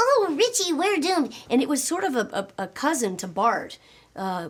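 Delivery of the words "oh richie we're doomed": raised, very high, sugary saccharine whine. Speaker recalling a wimpy character from a childhood show, imitating a saccharine-sweet whiny voice. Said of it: "very saccharine sweet".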